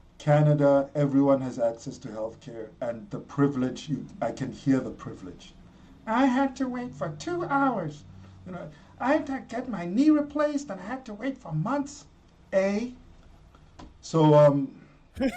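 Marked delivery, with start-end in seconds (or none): 6.1-13.0 bad, put-on Canadian accent, pitched high. A speaker performs an impression, then admits it was bad; bad canadian impression. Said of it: "I did such a bad impression".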